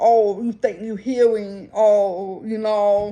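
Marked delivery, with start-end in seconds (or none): none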